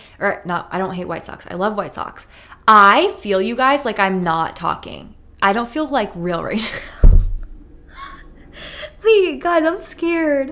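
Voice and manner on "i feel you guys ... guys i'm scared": nervous, scared laughing speech with swooping pitch. Speaking to 'you guys', the speaker suddenly feels unreal: laughing while talking. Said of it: "I know I'm laughing".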